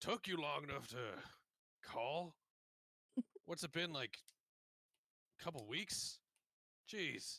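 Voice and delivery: gruff character voice. Retelling the moment Corbus's voice takes over the call, Corbus's gruff voice. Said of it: "Corbus's gruff voice kind of takes over".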